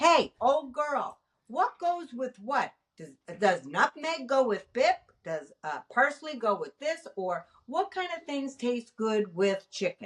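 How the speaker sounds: ordinary delivery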